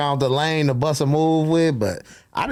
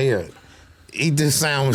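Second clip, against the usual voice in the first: ordinary talk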